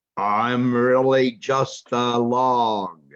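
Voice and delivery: rough crocodile voice. Reading a fable aloud, the hidden crocodile answers the mouse deer in a rough voice. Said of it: "A rough voice said".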